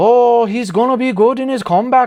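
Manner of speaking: bad put-on Irish accent, high and loud. Speaker tries an accent, then apologizes to listeners for it: bad Irish accent. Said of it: "Clearly, I can't talk in an Irish accent".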